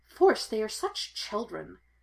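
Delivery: grumbled, mumbled, tossed off. Padme, walking beside Qui-Gon, reacts to the teasing exchange, muttering. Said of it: "she muttered".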